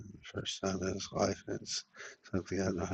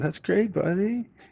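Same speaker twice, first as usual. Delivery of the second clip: much higher-pitched, chummy, buddy-like voice. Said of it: "He said".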